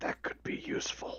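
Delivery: quiet whispering voice. Playing a character who leans close to another character: whispering. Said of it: "I lean close to him and I whisper".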